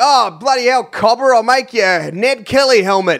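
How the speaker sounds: put-on Australian accent. Imitating a pretend blacksmith at a theme park: imitating an australian frontier blacksmith. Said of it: "people pretending to be blacksmiths in Australian frontier times".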